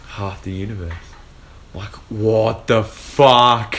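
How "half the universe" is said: whisper, quieter. Recounting watching a movie, retelling what someone whispered during it. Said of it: "Jenny whispered to me".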